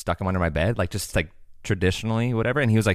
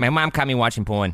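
Chicago-accented delivery; 2 semitones higher than usual. Talking about how a Chicago accent sounds, say the line in a Chicago accent. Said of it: "Chicago accent".

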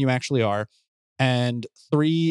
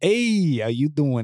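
slow, drawn-out, sleazy drawl. Speaker demonstrates the catchphrase they use for Clyde: sleazy Clyde voice. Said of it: "Kind of like the sleazeball that he is".

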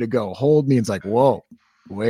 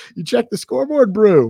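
terrible fake South African accent, very high, loud; 10 semitones higher, 6 dB louder than usual. Joking about a coach from south africa, in a terrible south african accent. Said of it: "my South African accent's terrible".

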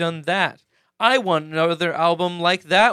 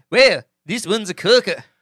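bad rough New Zealand accent, slightly Australian; 3 semitones higher, 4 dB louder than usual. Speaker repeating a phrase while trying out accents, in a bad New Zealand accent. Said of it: "That was a pretty bad New Zealand".

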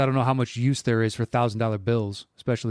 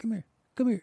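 very high, hushed, muttered under the breath; 10 semitones higher, 4 dB quieter than usual. Retelling a man hiding by a phone booth beckoning someone closer, under his breath. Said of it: "Just like under his breath".

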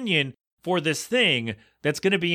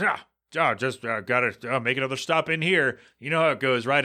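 mock-grumpy man voice, lower pitch; 3 semitones lower than usual. Retelling a grumpy man in a doorway answering his greeting, imitating a grumpy man. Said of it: "just like a grumpy look on his face".

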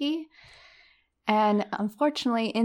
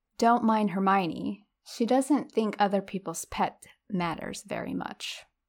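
plain

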